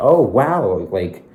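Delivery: high, loud, fake-friendly girlish gush.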